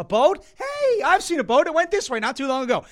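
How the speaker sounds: very high, loud, squeaky cartoon voice, pitch swooping around. Quoting Finding Nemo on the day the tank is clean, in Dory voice. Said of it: "I'm quoting Dory".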